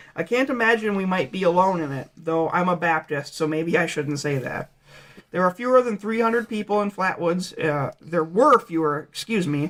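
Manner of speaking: ordinary talk, nothing marked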